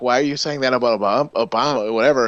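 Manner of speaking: mock patronizing, superior, talking-down tone. Retelling own reply to tweets about Obama: imitating a condescending tone. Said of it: "I kinda said that condescendingly".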